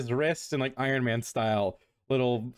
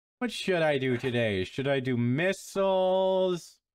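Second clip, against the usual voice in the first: excitable, brash, cocky showman voice with swagger; 3 semitones higher than usual. A masked fighter cheerfully wonders aloud which weapon to use today, teasing a friend. Brash cocky voice.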